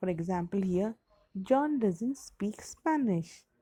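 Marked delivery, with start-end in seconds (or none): 1.4-3.4 voice drops at the end on Spanish. Explaining English intonation with an example, falling intonation on 'Spanish'. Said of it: "If I speak in this manner, so my intonation is going down".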